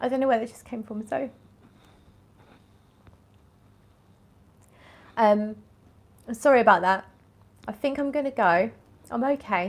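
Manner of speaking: talking through tears, tearful. Speaker signing off after thanking Hilary, crying while talking. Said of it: "I'm crying".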